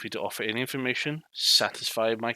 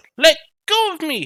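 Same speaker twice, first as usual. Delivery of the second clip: very loud, very high-pitched youthful cry; 14 dB louder than usual. Narrator voices a character being dragged to a table: very young, loud voice. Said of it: "You hear this voice, very young, very uh, loud voice".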